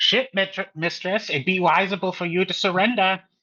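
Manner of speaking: high-pitched, yelled, forceful delivery. A character floats into cover during a boarding, calling to the ship mistress, yelling. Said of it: "tries to float into cover while yelling".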